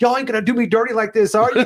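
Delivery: play-acted high-pitched screaming. Retelling a winner's reaction after his dead microphone came back: imitating Daniel Kaluuya screaming. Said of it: "he's screaming".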